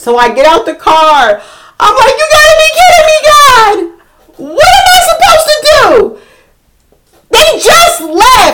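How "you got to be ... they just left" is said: put-on, very high, panicked, full-lung screaming. Retelling getting out of the car in traffic, not knowing what to do, retelling own screaming. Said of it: "I am screaming to the top of my lungs".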